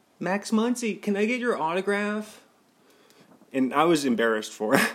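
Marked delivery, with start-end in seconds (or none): 0.2-2.4 squeaky high-pitched voice. Retelling how a fan asked for an autograph, mimic the fan's delivery. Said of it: "But he said it like really like".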